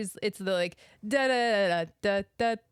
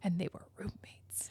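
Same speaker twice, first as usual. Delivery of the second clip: breathy, hushed, secretive whisper; 11 dB quieter than usual. Retelling a video where a guy whispers at his phone: imitating a whisper. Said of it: "the guy whispers at the phone".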